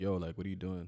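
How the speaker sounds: ordinary talk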